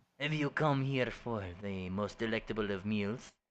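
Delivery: hammy, exaggerated, bad put-on French accent. A game master voices Gustav looking the player over: Gustav in a bad French accent. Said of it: "in my shitty fucking French accent".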